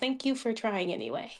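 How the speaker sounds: sad, tender delivery tinged with sadness. Voicing Amasea, who looks up and thanks him: sadly smiling. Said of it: "she will smile, uh, sadly".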